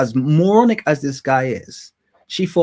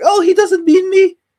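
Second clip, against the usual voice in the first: very high, shrill, ditzy, silly put-on woman's voice; 6 dB louder than usual. Addressing viewers, the speaker mocks a silly woman excusing her boyfriend. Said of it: "You sound like this silly woman here".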